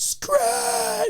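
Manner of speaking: very high, drawn-out, freaked-out emotional scream. Recounting seeing someone's hand badly hurt, retelling an emotional scream. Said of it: "get that emotional scream like".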